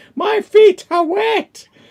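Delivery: shrill, very high, very loud screaming. Retelling how a man screamed while they tried to get into a building, retelling a scream. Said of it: "he's like screaming at the top of his voice".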